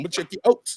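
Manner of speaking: fake, put-on Canadian accent. Promising another speaker to check out their channel: put-on Canadian accent. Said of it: "the Canadian accent".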